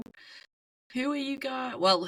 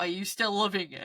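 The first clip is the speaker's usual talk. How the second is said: ordinary delivery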